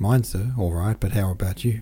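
usual speaking voice

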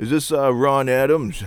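put-on Maine accent. Retelling a phone call made after gathering information about the person, in a put-on Maine accent. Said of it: "I throw on a Maine accent".

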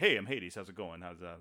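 low, schmoozing used-car-salesman patter. Retelling how an actor first read a villain's lines: imitating a used car salesman Hades. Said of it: "just did this kind of used car salesman".

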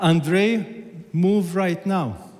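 mock stronger commanding tone, firm, high and deliberate. Retelling the same voice heard again, stronger: imitating a stronger command. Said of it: "the same voice after two seconds stronger".

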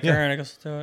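play-acted dead-level deadpan with zero feeling. Acting out an imagined reluctant rescuer's reply, mimicking saying it with no emotion. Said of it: "With no emotion".

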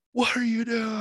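shrill, very high, loud scream. Retelling how the bartender greets visitors walking in: imitating a bartender screaming. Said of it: "And just starts screaming at you".

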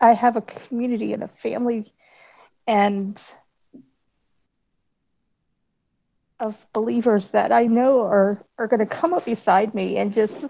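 tearful voice, crying happy tears. Thanking a community of believers on screen: crying happy tears. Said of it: "and I'm crying".

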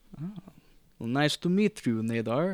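put-on deep Russian accent. Argus greets one of the heroes for hire, Argus, deep Russian accent. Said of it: "He has deep Russian accent".

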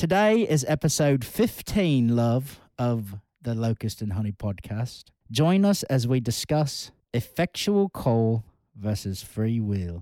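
put-on heavy old-world British preacher accent. Podcast host introduces the episode to the co-host, trying to sound Puritan. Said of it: "I'm trying to sound very Puritan here".

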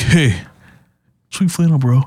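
put-on high, swaggering, cocky little-kid voice. Retelling a kid's compliment in a store, imitating a swaggering nine-year-old kid. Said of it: "he's got his arms puffed out, and he's like".

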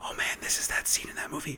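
unvoiced, quiet whisper.

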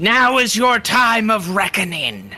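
acted shouting. Voicing a character facing a vampire army: in-character shout.

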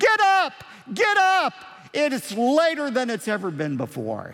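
put-on yelling child's voice.

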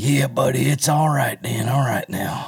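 slow voice, each word stretched out. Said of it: "this is my [name] impression".

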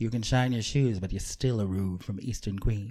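campy put-on cannibal killer voice. Joking about eating the other speaker, doing the gayest Hannibal Lecter impression. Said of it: "The gayest Hannibal Lecter impression you've ever heard".

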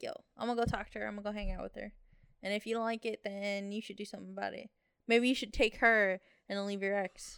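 plain

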